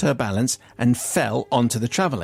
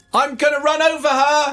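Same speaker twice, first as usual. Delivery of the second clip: put-on very high-pitched, shrill shout; 14 semitones higher, 4 dB louder than usual. Recounting calling out while no one came to help, retelling a shout. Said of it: "I'm shouting".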